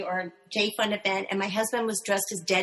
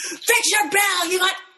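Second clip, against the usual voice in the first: acted out, very high pitched barking yell; 10 semitones higher, 5 dB louder than usual. Recounting a stranger at the door who yelled at the speaker, retelling a man's yell. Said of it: "he yelled at me".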